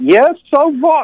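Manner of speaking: put-on thick, very high, slow Hungarian accent. Telling family he is HIV positive, speaker quotes his grandmother's reply in Hungarian accent. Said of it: "in her Hungarian accent".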